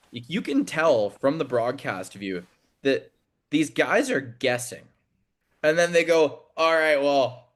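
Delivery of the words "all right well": hesitant speech, higher pitch. Imitating referees unsure about a call: imitating hesitant referees. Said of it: "stop and hesitate before they make it".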